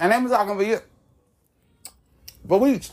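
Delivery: very high chatter spoken with mouth full. Mid-story, the speaker talks while eating a biscuit. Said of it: "I'm sorry, I'm eating the biscuit here".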